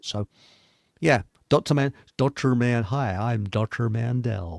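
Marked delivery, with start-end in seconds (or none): 2.8-4.6 put-on American accent, spoken slowly. Imitating how an American doctor speaks: imitating Doctor Mandel's American voice. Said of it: "and he speaks like this".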